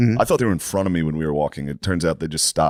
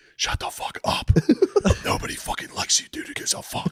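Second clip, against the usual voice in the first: put-on drunken mouthing off, loud outburst. Retelling how a drunk spectator snapped at a loud one: imitating a drunk man. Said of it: "O'Connor was hammered next to him".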